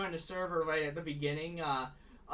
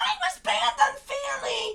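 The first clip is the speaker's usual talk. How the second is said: very high, very loud, swooping shrill squeak; 9 dB louder than usual. Imitating an old voice ranting about being banned: squeaky voice. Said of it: "Old squeaky voice would have uh, had a word to say. Wait, let me try to imitate it".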